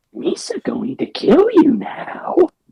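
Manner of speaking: funny, goofy voice made to sound menacing, creature-like. Retelling a villain's first line in a Lego special: funny intimidating Jar Jar voice. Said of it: "speaking in a funny, intimidating voice".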